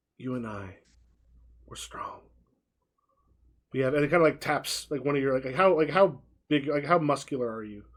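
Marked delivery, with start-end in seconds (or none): 0.2-2.2 close, hushed, breathy whisper. Voicing a character who stops close to a player: whispering. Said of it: "stops close to you and whispers".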